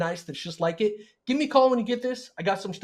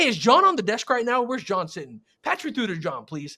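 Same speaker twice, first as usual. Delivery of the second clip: put-on breezy, casual, assumptive familiarity, like an old pal; 2 semitones higher than usual. Demonstrating a cold call to a dealer's receptionist, assumptive, like knowing the guy. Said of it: "The assumptive, I know the guy".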